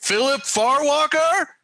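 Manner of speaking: very high, full-lunged, top-of-the-lungs scream. As Rook, calling out for someone not seen today, yelling at the top of his lungs. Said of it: "yell at the top of his lungs".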